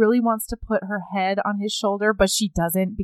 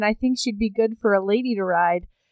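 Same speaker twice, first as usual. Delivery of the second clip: ordinary talk, nothing marked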